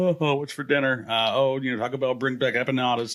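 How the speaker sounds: usual speaking voice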